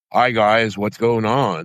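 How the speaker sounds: butched-up, toughened put-on voice. Showing how they talk to people in unfamiliar public places, butched-up voice. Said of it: "I butch it up".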